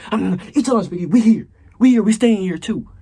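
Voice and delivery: shrill, very high, very loud yell. Retelling a lunch-table standoff at school, acting out his past self, retelling a yell. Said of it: "I'm eating while I'm yelling".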